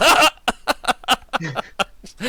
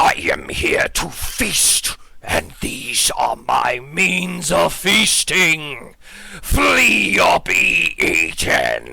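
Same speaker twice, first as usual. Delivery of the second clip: very slow, creaky, eerie, menacing disembodied voice; 3 semitones lower than usual. Voicing a voice that all the players hear in their minds: scary disembodied voice. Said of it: "disembodied voice".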